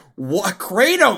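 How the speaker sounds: loud, high, fed-up, disbelieving exasperated cry. Imitating a rescued game character fed up with kratos: imitating an exasperated character. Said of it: "this character over and over cannot get over".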